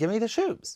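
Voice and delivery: high witch voice. Retelling the witch's demand from the Wizard of Oz movie: Wicked Witch of the West voice. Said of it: "the witch is like".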